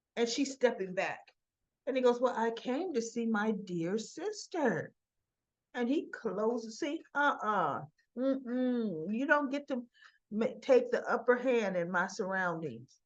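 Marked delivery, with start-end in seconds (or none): 2.2-4.9 creepy, eerie, charming sweet-talking voice. Retelling a visitor's greeting at the door: imitating eerie creepy charming talk. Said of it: "trying to be that eerie, creepy, charming".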